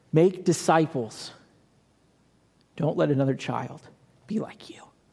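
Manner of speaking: tearful, crying voice, speaking through tears. Recounting what Scripture showed them about their calling, crying. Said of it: "Here I am crying".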